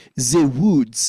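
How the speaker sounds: French accent, th said as z. Showing learners a French accent on a line: French accent, Z for TH. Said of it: "we're gonna add a Z in".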